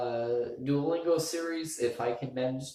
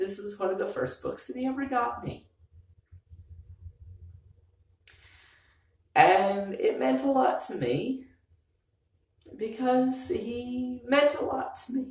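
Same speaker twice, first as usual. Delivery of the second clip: very high, teary speech through crying; 11 semitones higher than usual. Speaking to their best friends before moving to another state, crying. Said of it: "And now I'm crying for some reason".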